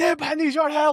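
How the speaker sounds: very high-pitched, loud yelling shout. His old character, struggling with the quarterstaff, calls to Nib: yelling for help. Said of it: "he's yelling at Nib".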